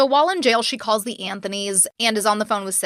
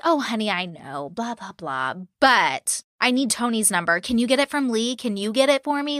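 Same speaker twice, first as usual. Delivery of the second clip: fake-sweet, patronizing, condescending tone. A speaker retells what a woman kept saying to her, mock-patronizing tone. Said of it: "she's so patronizing".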